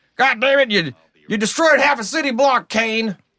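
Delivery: very high, loud, hotheaded blow-up yell. Mocking a show's stereotypical hothead captain, Captain Malone yelling impression. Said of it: "the hothead captain".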